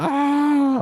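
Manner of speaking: put-on very high, long-held ah scream. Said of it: "screaming blatant murder".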